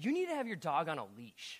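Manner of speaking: acted, really snotty tone with swooping pitch. Retelling what she told a dog's owner, acting out a snotty remark. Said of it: "I said it in a really snotty way".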